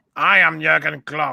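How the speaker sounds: slow, rough put-on voice, dragged out with a rasp. Revealing who is in the picture: Jurgen Klopp impression. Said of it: "That's my impression of him".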